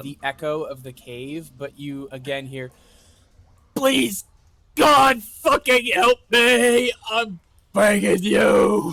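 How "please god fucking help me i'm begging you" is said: shrill, very high, very loud, anguished howl. Voicing a lost companion howling from inside a cave: howling cries of anguish. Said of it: "Sheikler is howling from".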